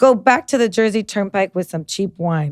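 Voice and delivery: ordinary talk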